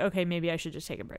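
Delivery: ordinary delivery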